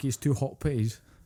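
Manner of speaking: mock Dundonian accent. Showing how people in Dundee talk fast: imitating a Dundee accent. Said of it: "your Dundonians and everything".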